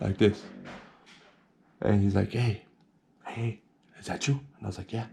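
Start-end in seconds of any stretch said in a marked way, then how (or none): 2.3-4.3 hushed, barely voiced whisper. Retelling how a man at the door greeted the speaker, retelling a whisper. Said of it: "he's whispering at me".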